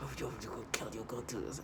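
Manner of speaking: mock threatening, low, very soft hiss.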